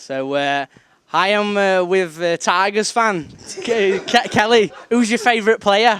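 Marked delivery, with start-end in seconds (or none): 1.1-6.0 very loud, high, stammering interviewer voice. Doing an impression of the interviewer after being asked to: imitating Kelly. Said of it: "I'll do an impression of you".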